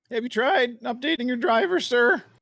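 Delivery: very high tech-support style voice with a voice crack. Imitating a tech support agent asking about drivers: imitating tech support with voice crack. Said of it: "I like that you put the voice crack in there".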